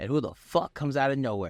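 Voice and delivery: ordinary delivery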